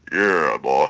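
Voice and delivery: very low, metallic, sexy voice. Imitating Jazz while praising the character: Jazz's metallic sexy voice. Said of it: "that metallic, like, like, sexy voice".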